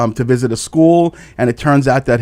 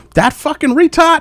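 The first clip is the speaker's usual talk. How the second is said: put-on Boston accent, pitched higher. Retelling a quick reply in a conversation: imitating a Boston accent. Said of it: "his typical Boston accent".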